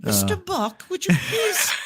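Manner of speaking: put-on polite British accent. Imagining the captain talking a passenger down: polite British captain voice. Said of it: "a very polite British captain".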